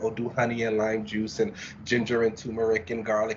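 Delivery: plain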